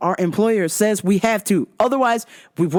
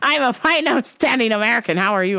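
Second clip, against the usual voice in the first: put-on voice of an elderly man. Retelling what an old customer with a cane said: imitating an old man. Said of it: "[name] came in back from the dead".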